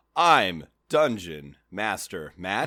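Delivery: very slow, low, painfully drawn-out delivery. Host introducing himself at the start of an episode, talking very slowly. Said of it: "I don't know why we're talking so slowly".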